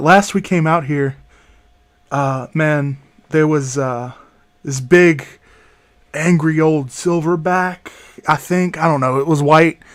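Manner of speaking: whispering in a put-on character voice. Voicing a character warning the group about a past attack: whispering in character. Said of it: "he's whispering".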